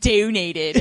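put-on Baltimore accent. Showing how they slip into an accent on one word: Kathy Bates's weird Baltimore accent. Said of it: "slipping into Kathy Bates's weird Baltimore accent".

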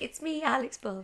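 put-on lonely-sounding voice. Retelling recording an episode alone, mock lonely voice. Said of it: "I sound so lonely with just my voice".

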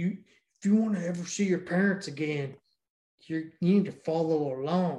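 clumsy, bad, fake Southern accent. Retelling what the kids say, in a really bad Southern accent. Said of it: "they have really bad Southern accent".

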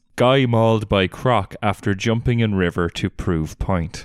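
ordinary delivery

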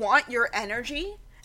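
normal talking voice

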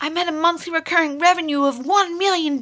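put-on American accent. Quoting a success story from videos, the speaker slips into an American accent. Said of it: "sorry, I had an American accent".

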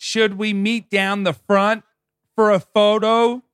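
play-acted very high, shrill yell. Retelling a woman in Rod Laver Arena yelling to her friend down the aisle, imitating her yelling. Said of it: "just yelling to her friend".

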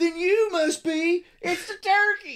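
very high, loud, drawn-out hollered call. Finishing the other speaker's quote of Billy finding the turkey: Billy, said really loudly. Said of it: "we both said that really loudly".

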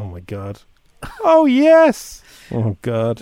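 put-on laughing moans. Retelling lying in the dark overhearing a couple: mocking moans while laughing. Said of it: "just laughing".

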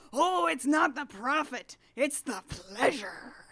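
very loud, booming, drawn-out yell. Retelling how a character yells back at the dragon: imitating someone yelling back. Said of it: "And he yells back".

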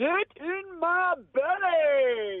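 passionate delivery. A contestant retries the line after the hosts ask for more: with more passion. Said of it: "A bit more passion as well".

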